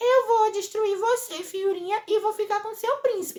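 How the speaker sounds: thin, tiny put-on voice, very high. Retelling a story, quoting what Belezinha says: Belezinha's little voice. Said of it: "com essa vozinha, viu? Ela fala assim".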